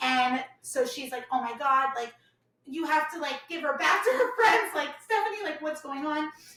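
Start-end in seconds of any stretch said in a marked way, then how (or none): 1.3-6.3 frantic, panicked, freaked-out voice. Retelling a prank call where the friend panics: imitating a friend freaking out. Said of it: "she's freaking out".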